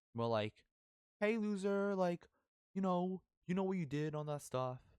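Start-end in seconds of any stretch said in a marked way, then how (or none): 1.2-4.7 loud, very high, mocking sarcastic tone. Recalling how others called out their name: retelling a sarcastic taunt. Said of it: "calling it in a sarcastic tone".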